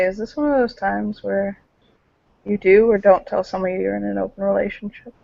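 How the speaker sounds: very soft, close, leaning-in murmur. Voicing a character leaning over to ask a friend: said very softly. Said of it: "very softly".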